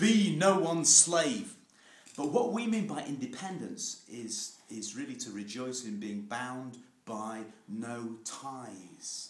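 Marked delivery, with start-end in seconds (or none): 0.0-1.5 very loud, booming, slow, drawn-out raised voice. Retelling a father's words to the speaker: imitating a raised voice. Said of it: "as my father said to me with a raised voice, just like that".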